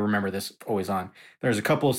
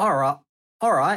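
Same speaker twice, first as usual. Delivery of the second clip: high, put-on Australian accent. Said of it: "All right, here he goes".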